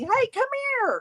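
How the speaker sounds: high, carrying hollered call.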